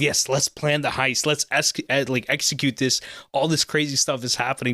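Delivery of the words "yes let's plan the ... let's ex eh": usual speaking voice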